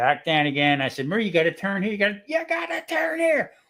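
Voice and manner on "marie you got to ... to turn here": yelling, pitched higher. Retelling telling a driver where to turn: imitating himself yelling. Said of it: "Stop yelling at me".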